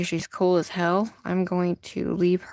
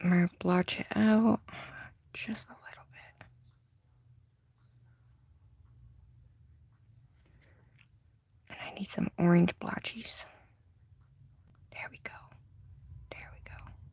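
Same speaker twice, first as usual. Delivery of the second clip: whispered speech, much quieter; 8 dB quieter than usual. Speaker blotching colors while painting, talking to viewers: whispering. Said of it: "I don't even know why I'm, uh, whispering".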